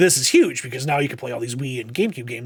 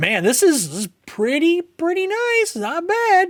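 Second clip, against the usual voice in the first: much higher, impressed put-on voice. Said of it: "I'm like".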